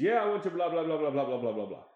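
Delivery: put-on, Indian-accented speech. Retelling what a character says to the crooked cop on the phone, in an Indian accent. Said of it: "sounded pretty Indian to me".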